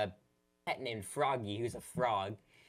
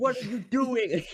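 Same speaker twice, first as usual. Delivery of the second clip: put-on scream, higher and louder; 13 semitones higher, 9 dB louder than usual. Retelling playing a confusing fishing game with Hana: retelling screaming at the game. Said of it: "Hana and I were just screaming".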